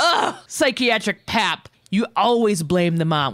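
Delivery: put-on heated, raspy, high-pitched scream. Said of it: "When he screamed".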